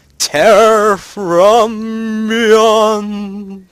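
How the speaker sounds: very loud, high, eerie, spooky voice, drawn out. Announcing the title on a Halloween special episode: spooky voice. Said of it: "I did say that in a spooky voice".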